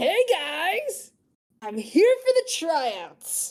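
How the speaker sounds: friendly, cheerful high swooping yell, "guys" drawn out. Narrating Chong lowering himself down with a big smile and waves; cheerful yell. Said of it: "he yells out with a big smile".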